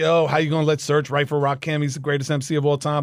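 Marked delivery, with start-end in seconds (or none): none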